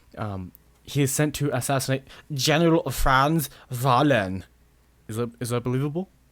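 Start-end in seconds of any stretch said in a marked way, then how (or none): 0.8-4.4 acted German-accented voice. Summarizing a story about a sniper sent after a general: German accent. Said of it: "I want to say that in a German accent".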